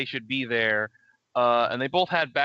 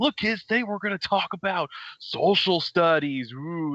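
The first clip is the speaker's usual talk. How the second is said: high, slow, drawn-out, forced, fake excitement; 5 semitones higher than usual. Imitating a substitute teacher who tries too hard to be hyped: imitating Mister Caffeine's forced hype. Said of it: "that substitute teacher who tried too hard to be hyped up".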